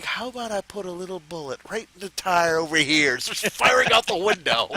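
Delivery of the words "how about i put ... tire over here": cheerful, gentle, happy manner. Imagine a man shooting at cops during a high speed chase, in a put-on painter voice. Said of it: "using that kind of voice the whole time".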